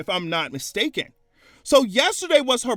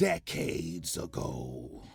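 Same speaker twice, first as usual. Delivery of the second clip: whispery, breathy, dark villainous voice; 13 dB quieter than usual. Remarking on a relationship long past, in a villainous tone. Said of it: "I say it with a villainous tone".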